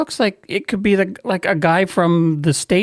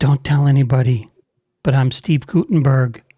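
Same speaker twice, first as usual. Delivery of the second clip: put-on whisper; 6 semitones lower than usual. Retelling how a hooded man leaned in at the ticket counter: retelling a whisper. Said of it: "Why are we whispering?".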